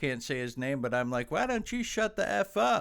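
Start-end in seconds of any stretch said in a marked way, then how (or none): 1.3-2.8 very high-pitched, shrill yell. Retelling yelling back at a father cheering on a kids' fight, retelling own yell. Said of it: "I yelled at him".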